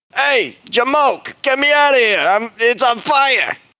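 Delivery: shrill, very high, shouting skeleton voice. A game narrator voices a skeleton tied to a table, yelling at the players: Boner the skeleton yelling for help. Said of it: "The skeleton is yelling at you".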